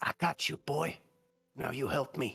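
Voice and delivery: soft, quiet, hushed whisper. Narrating to a player, voicing a voice inside their head: quiet whisper. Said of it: "quiet whisper".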